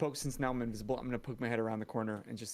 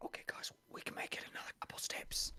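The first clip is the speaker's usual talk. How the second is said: quiet, breathy whispering. Coming back to the group in character to report ahead: whispering. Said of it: "come back to the group real quick and whisper".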